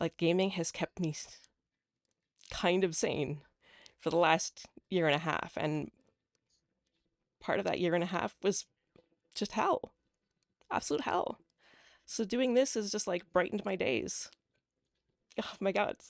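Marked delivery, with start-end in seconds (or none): 12.1-16.0 choked up with emotion, higher. Telling another speaker how gaming brightened their days, tearing up. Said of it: "I'm all tearing up now".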